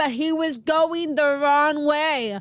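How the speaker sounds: very loud, sudden, drawn-out narrator shout. Recalling a show's narrator, the speaker retells Joan Cusack's sudden shout. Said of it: "suddenly she shouts".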